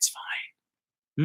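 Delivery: soft, unvoiced whisper.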